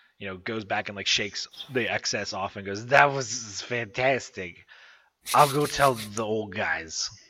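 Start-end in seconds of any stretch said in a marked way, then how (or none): 2.9-7.1 put-on drunken, sloshed, boozy, slurred delivery. Playing a drunken tiny person just before it flies away: drunken voice. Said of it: "Even more drunkenly than before".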